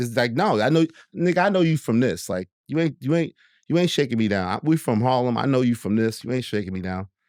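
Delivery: ordinary delivery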